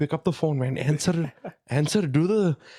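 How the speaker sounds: put-on thick Pakistani accent. Speaker mimics his friend urging him on, in a thick Pakistani accent. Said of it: "thick Pakistani accent".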